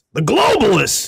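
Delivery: very high, loud, rough-edged holler. Showing a somewhat good Alex Jones impression. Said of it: "I do a somewhat good Alex Jones".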